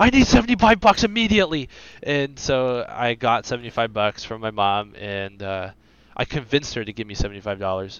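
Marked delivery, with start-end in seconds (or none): 0.0-1.7 mock very high, loud, frantic freaking out. Retelling asking mom for money after a find: retelling own past freak-out. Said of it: "I started freaking out".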